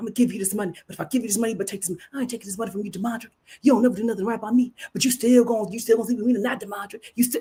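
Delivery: acted-out whispered arguing, hushed and heated. Retelling two people arguing far across the yard, acting out their whispered fight. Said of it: "they were whisper fighting".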